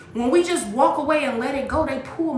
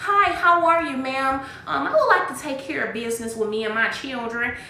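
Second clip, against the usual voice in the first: put-on prissy, overly proper polite voice. Retelling own past phone calls about business, imitating own prissy voice. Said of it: "putting on a prissy voice".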